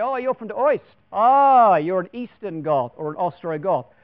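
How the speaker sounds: slow put-on German accent, "East" said as "Oist". Speaker explaining the name Ostrogoth, voicing how a German would say it, German accent. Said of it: "if you're a German, you're going to say".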